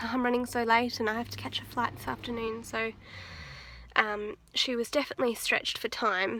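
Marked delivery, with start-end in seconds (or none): none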